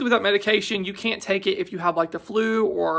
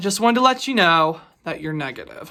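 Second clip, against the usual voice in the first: mock serious, somber tone. Retelling how the pharmacy caller gave the test result: imitating a serious tone.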